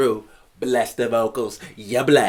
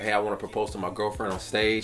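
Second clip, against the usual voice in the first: ordinary talk, nothing marked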